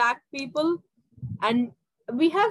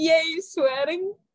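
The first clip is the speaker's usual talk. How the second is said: put-on cheering voice, higher; 4 semitones higher than usual. Imitating how Katie will react to the swearing: imitating Katie cheering. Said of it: "she's gonna be like".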